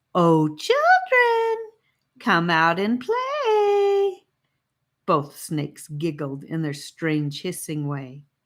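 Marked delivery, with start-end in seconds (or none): 0.1-4.2 very high, syrupy, drawn-out fake-sweet holler. A snake calls out to children it thinks are hiding, mock sweet voice. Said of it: "hollered out in a mock sweet voice".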